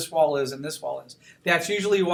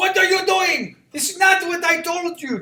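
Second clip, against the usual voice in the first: very high, angry, scolding Greek-accented dad voice; 12 semitones higher, 4 dB louder than usual. Warning students who draw it wrong, playing an angry persona: angry Greek [name] voice. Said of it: "angry Greek [name]'s gonna come out".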